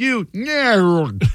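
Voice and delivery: fake dubbed voice, the word "nerd" stretched out. Retelling an edited TV clip, the speaker does the fake Spicoli voice. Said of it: "the fake Spicoli voice says".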